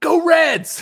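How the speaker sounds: very high, loud, shrill whooping yell. Retelling a passerby on a street screaming out: imitating a stranger screaming. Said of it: "he just screams out".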